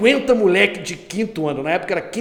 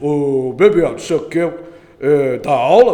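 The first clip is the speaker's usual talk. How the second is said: deep, loud, low, weighty voice; 5 semitones lower, 5 dB louder than usual. Retelling how Cristóvão answered the speaker's plea for help, imitating Cristóvão's deep voice. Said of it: "o Cristóvão tinha uma voz grave e falou assim".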